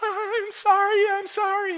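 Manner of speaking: mock fearful, very high-pitched, very drawn out. Retelling the apology after the room goes dark: imitating Bilbo afraid. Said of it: "Bilbo fears".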